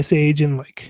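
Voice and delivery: ordinary talk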